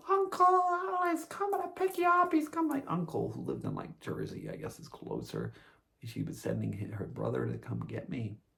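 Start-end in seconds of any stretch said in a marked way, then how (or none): 0.0-2.7 very high, loud, frantic panicked scream. Retelling a call from a panicking mother: imitating a screaming mother. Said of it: "she's on the phone screaming".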